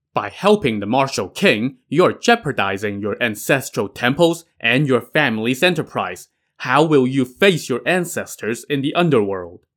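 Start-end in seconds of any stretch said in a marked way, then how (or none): none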